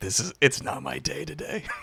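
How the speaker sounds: softly spoken. Speaking in character after a failed roll: said quietly. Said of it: "quietly say".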